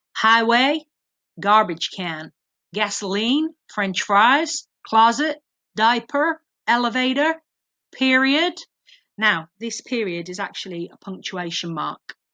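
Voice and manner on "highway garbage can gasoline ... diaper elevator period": cringy, dodgy, fake put-on American accent. Quizzing viewers on British English words: dodgy American accent. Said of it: "I am going to put on a dodgy American accent here".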